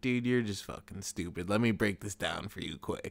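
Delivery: put-on relaxed, chill, patronizing, condescending tone. Describing how a fighter talks trash: imitating Dominic Cruz, chill and condescending. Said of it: "he talks down to you in a very chill way".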